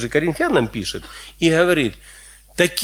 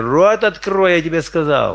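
ordinary delivery

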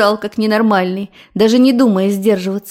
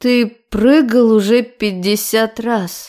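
icy, cold voice with a trembling waver. A narrator reads a woman confronting Tyoma after a guest leaves, cold, trembling voice. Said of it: "спросила холодным дрожащим голосом".

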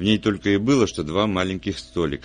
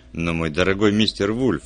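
ordinary delivery

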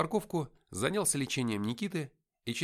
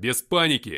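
very loud barked delivery; 9 dB louder than usual. Responding after a soldier yelps about weapons in the trunk, barked. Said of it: "рявкнул я".

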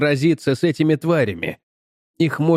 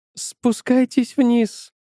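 shaky, quavering, trembling, pitched-up voice; 9 semitones higher than usual. Calling the children downstairs once the chase falls behind, trembling voice. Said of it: "дрожащим голосом позвала Дженнет".

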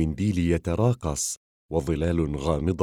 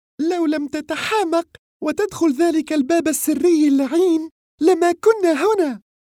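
spitting each word, very high-pitched; 6 dB louder than usual. Narrator reads a woman's retort to her companion: as if spitting the words. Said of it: "قالت وكأنها تبصق".

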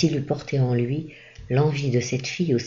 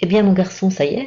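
cheerful, raised, high voice; 6 semitones higher, 7 dB louder than usual. Reading a priest greeting a waiting young man at night, cheerfully. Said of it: "dit gaiement".

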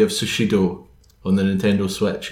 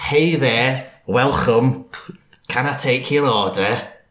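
cheery, put-on Cockney accent; 3 semitones higher than usual. Asked to read lyrics as a named comedian: John Bishop impression. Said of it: "I'm John Bishop".

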